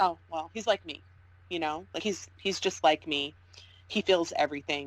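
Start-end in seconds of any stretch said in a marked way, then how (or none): none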